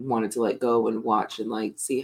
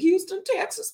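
much higher-pitched, loud shouted call. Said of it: "Or like [name]".

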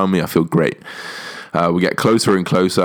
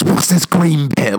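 mock very high, screamed voice; 10 semitones higher than usual. Retelling a strip search, the speaker acts out the searcher screaming at them. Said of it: "screaming at me".

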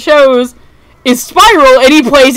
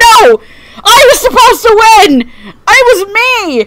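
play-acted very high, frantic, unravelling, losing-it outburst; 10 semitones higher than usual. Describing a character's defeat, imitating him losing it. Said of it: "he's just, like, losing it".

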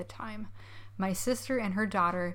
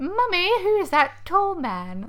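put-on very high, very loud, swooping, shrill Victorian child voice; 10 semitones higher, 10 dB louder than usual. Quoting a niece asking her mother, in a put-on Victorian English child voice. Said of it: "the purposes of this quote, it's she's a Victorian English child".

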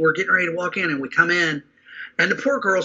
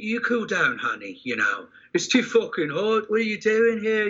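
imitated English accent; 4 semitones higher, 3 dB quieter than usual. Retelling how a sweet man sat a woman down, speaker quotes him in English accent. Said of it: "he's got that English accent".

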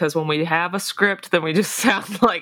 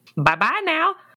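very high-pitched, squeaky voice; 10 semitones higher than usual. Signing off the episode, doing an Ian impression. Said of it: "That was my best Ian impression".

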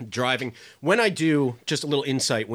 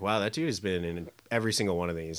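ordinary talk, nothing marked

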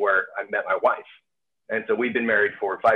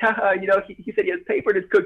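mock giggling, very high laughing delivery; 11 semitones higher than usual. Retelling how mom laughed while telling everybody: imitating someone laughing while talking. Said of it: "she starts laughing and she's telling everybody".

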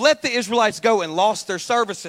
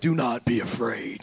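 slow, steady, reassuring voice; 10 semitones lower, 6 dB quieter than usual. Reading scripture aloud, voicing Moses answering the people: Moses voice. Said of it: "This is how Moses sounds".

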